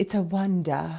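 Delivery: polished put-on British accent, poetic sound. Showing a poetic word with a put-on British accent. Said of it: "you have to do it with a British accent".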